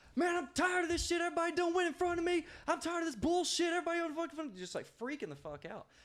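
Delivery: acted-out angry yell, high-pitched. Telling a story about a man who started freaking out, retelling an angry freak-out yell. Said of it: "he started freaking out".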